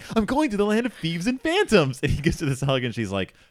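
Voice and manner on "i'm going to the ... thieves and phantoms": very high, thrilled, play-acted excited outburst. Retelling a film scene, the character bursting into his wife's room: excited Hutter voice. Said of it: "excitedly bursting into a room".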